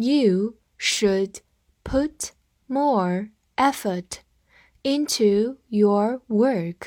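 very slow reading, phrase by phrase.

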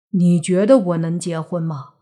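usual speaking voice

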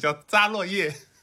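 accent from southern China. Saying a book title after listeners mocked the accent: southern Chinese accent. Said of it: "那我就用南方口音来念这本书的名字".

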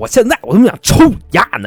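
put-on anger. A storyteller acts out an enraged person's threat, retelling an angry threat. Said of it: "就他妈这法老气呀".

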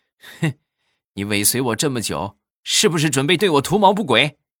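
put-on snarling voice.

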